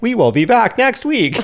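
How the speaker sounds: very high app text-to-speech readout voice. Speaker imagines the episode ending with the TikTok text-to-speech voice. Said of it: "the TikTok voice being like".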